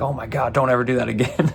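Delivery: put-on flustered, panicked, alarmed outburst. Retelling how the venue reacted to a swinging fly bar: imitating panicked venue staff.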